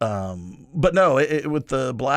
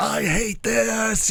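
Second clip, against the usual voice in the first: very high, blunt, shrill outburst; 11 semitones higher than usual. Retelling how a wife reacts to teasing: imitating someone yelling. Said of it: "just yells like".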